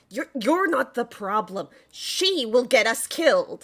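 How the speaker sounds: half-yelling. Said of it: "is still kind of yelling at Zelthara".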